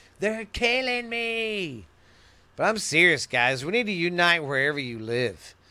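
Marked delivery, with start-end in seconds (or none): 0.2-1.9 high scream with me drawn out. Comparing oneself to a prisoner grabbing the bars: imitating a prisoner screaming. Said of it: "just screaming".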